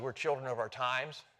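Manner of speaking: ordinary talk, nothing marked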